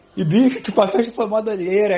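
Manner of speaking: ordinary delivery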